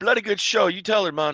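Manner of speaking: put-on Jamaican-British accent.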